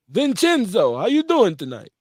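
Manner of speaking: loud, swooping Italian gangster voice. Greeting Vince in an Italian mobster voice. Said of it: "that's my that's my Italian mobster voice".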